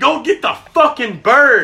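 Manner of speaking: loud, high, screamed delivery. Retelling a dove hunt after being deafened by a shotgun: imitating someone screaming. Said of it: "he's screaming at me".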